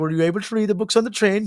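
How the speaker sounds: put-on Norwegian accent. Retelling what a woman said, in a put-on Norwegian accent. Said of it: "she's like".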